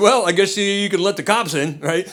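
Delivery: ordinary delivery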